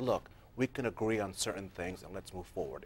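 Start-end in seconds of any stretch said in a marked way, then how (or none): none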